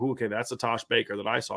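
ordinary delivery

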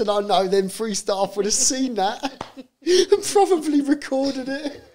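high, loud laughing while talking.

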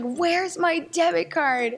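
freaked-out, high, drawn-out scream. Retelling a frantic search for a lost debit card: retelling a scream. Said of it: "I was screaming".

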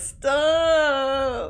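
put-on drawn-out, begging, pleading cry. Recounting how a man said stop, not commanding, imitating a pleading 'stop'. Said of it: "He didn't say that in a commanding voice. He was like, stop! Like pleading".

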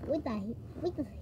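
low, soft, silly gibberish creature voice. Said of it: "enough with this boat noise".

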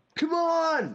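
yelling out loudly.

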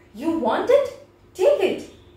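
sudden, abrupt, high, loud shout all at once. A narrator reads the boy's sudden line to the Asura: shouted. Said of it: "Skanda suddenly shouted".

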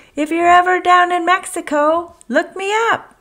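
very high, loud, calling shout. Bob, fluttering off on the breeze, calls back to Oscar, shouted. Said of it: "he shouted".

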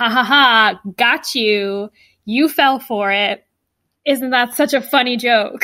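plain

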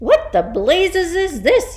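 shaken, high-pitched, loud yelling outburst. Seeing her own name written by an invisible hand, yelled. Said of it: "yelled the trenchbull".

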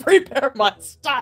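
put-on loud, old-time, villainous evil emperor voice. Voicing him ordering people to prepare his stuff, like an 1800s evil emperor. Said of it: "he sounds like an 1800s evil emperor".

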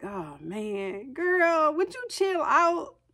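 laid-back, casual, slow, drawn-out, lifted voice. Voicing God telling an uptight person to relax: God talking casual. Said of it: "I don't know if he talked like that".

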